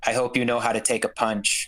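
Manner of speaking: muttering under breath. Narrating what a character says to another player, muttered under breath. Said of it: "under his breath".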